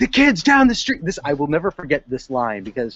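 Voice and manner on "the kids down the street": very high, shrill screaming yell. Retelling a strange man who ended up screaming at them, retelling a scream. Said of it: "he was screaming at me".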